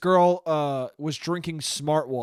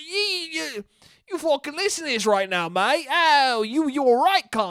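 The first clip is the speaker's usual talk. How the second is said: very high-pitched put-on British accent; 10 semitones higher than usual. Voicing an imagined podcast listener: British accent. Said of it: "With the Brit".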